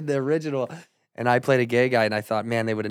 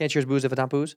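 very fast, rapid-fire delivery. Challenged to say the phrase just once, saying it really fast. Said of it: "Say that one time fast".

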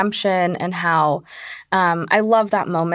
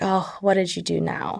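put-on exasperated teacher voice, quieter; 4 dB quieter than usual. Retelling what a teacher said to a student: imitating an exasperated teacher. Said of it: "just sort of exasperated".

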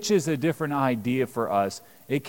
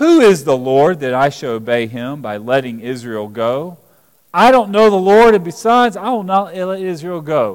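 very loud, scornful, sarcastic tone; 3 semitones higher, 9 dB louder than usual. Reading the ruler's reply to a request to let israel go: imitating a sarcastic response. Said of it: "here's the sarcastic response".

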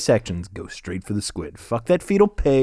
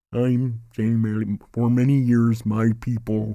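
put-on deaf-sounding voice.

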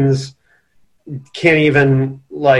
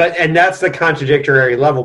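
ordinary talk

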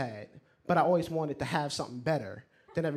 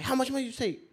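put-on yell, higher; 10 semitones higher than usual. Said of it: "he was screaming".

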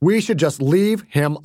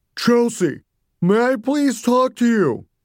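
strange, unfamiliar, pitched-up voice; 8 semitones higher than usual. Mommy calls Chelsea from outside the Winnebago: strange deep voice. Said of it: "The strange, deep new voice of Mommy".

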